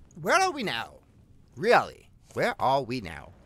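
slight, low, swooping, sing-song mild British accent. Talking to everybody watching, the speaker is stuck in a mildly British accent. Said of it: "I seem to be stuck in this mildly British accent".

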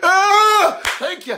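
tearful, weepy, high, drawn-out crying. Imitating a woman crying during her church testimony: imitating someone crying. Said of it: "she got to start crying".

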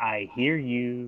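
barely audible, very soft half-whisper. In a tabletop game, half-whispering back through a door to whoever is outside, half-whisper. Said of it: "I'll whisper through the door back".

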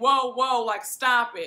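ordinary talk

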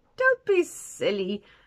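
laughing, amused, dismissive. Reading the shop owner's reply to mr. tusker, laughing. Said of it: "laughed the shop owner".

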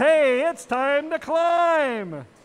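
loud, slow, called-out robot voice. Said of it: "And five oh nine says".

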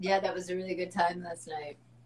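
acted low-key, flat, casual, offhand, no lift. Correcting the partner's retelling, imitating how he casually said it. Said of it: "He said it like this".

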